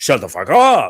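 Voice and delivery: bizarre, loud, over-the-top comically exaggerated delivery. Telling a listener what they blurted at a woman, retelling a comedic, exaggerated retort. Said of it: "almost like comedic".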